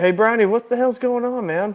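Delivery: hollering in a high voice. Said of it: "someone hollered at him".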